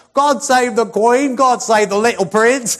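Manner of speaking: high-pitched, loud, slow crowd-like cheer.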